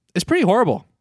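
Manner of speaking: very high, casually offhand, nonchalant delivery, acted out. Retelling a character's line about terrible news: imitating A G's nonchalant delivery. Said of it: "Just the most nonchalant way".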